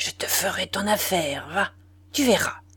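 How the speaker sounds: very quiet, low, through clenched teeth. Narrator voicing the narrator's own words to Jean at bedtime, very quiet through clenched teeth. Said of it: "très bas, les dents serrées".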